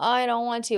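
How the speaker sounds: put-on childish, whiny kid voice. Quoting a kid who refuses to do something: imitating a whining child. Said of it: "our kid is whining".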